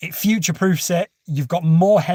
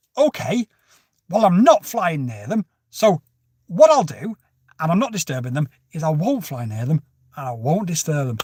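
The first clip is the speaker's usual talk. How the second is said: put-on, swooping, sarcastic British tone. Retelling pointing at the horses: retelling own sarcastic question. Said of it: "that quintessential art of British sarcasm".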